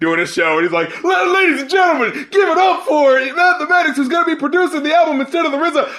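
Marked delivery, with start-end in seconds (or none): 1.0-5.9 high, hesitant, unsure announcer-style hype-up voice. Retelling the track's ending announcement: imitating a nervous stage hype-up. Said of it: "it really sounded like he was trying to hype up".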